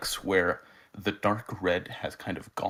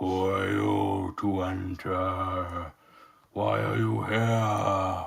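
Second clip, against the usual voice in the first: throaty, guttural voice with enter drawn out. Narrator voicing the kobold shaman bellowing at the players: deep guttural bellow. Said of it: "bellows out to you in a deep guttural voice".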